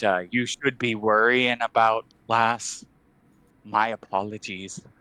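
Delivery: menacing yet apologetic. Speaking in character while turning to leave: menacing yet apologetic. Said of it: "almost apologetically".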